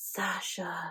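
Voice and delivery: long groaning moan with every vowel drawn out. Mocking how audiobook characters say each other's names, moaning Sasha, drawn-out vowels. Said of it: "always with this kind of like moan to it".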